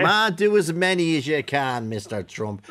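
plain

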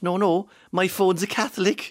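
put-on heavy Cork Irish accent, high and slow. Retelling the reply to a taxi driver's question, thick cork accent. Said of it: "I said in my thick Cork accent".

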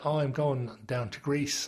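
ordinary talk, nothing marked

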